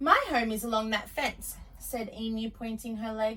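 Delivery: ordinary delivery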